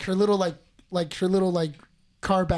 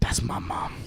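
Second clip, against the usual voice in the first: whispered, breathy dog voice; 9 semitones lower, 6 dB quieter than usual. Describing a photo, voicing the dog's thoughts: voicing Joey the dog. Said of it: "Joey's just looking at her like".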